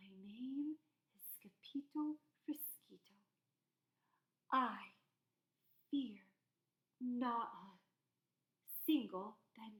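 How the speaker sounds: very soft, hushed, quiet voice. The narrator reads Scipito's reply to the banditos' threat: very soft voice. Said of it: "in a muy, muy soft voice".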